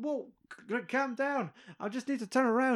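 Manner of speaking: put-on frantic, high-pitched, panicked voice. Retelling a scene where a man gets shouted at, imitating his panicked reply. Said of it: "the guy is fucking panicking".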